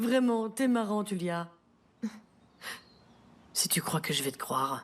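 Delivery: words broken up by mocking, derisive laughter. Dismissing a rival's boast: laughing while talking. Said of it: "Continuez à rire".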